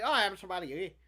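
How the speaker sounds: put-on Irish accent. Voicing an imagined travel companion in a put-on Irish accent. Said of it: "Let's give him an Irish accent".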